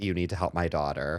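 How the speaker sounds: ordinary delivery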